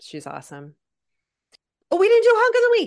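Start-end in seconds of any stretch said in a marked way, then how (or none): 1.9-2.9 very high, very loud, shrill, sudden yell. Speaker suddenly remembers a skipped segment mid-conversation, yelling. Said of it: "Sorry, I just yelled".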